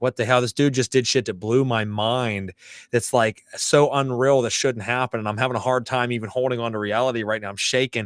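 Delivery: plain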